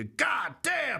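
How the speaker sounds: shouting voice.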